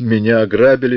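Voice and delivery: ordinary talk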